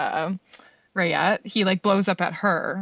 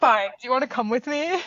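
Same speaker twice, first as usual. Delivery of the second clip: play-acted grudging, annoyed tone, pitched up; 6 semitones higher than usual. Retelling a film scene, he comes back to the car: imitating a pissed-off reply. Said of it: "really pissed about it".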